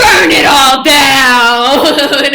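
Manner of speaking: very loud, slow, dragged-out bellowing shout. Rejecting being policed and respectability politics: Killmonger voice. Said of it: "in my fucking Killmonger voice".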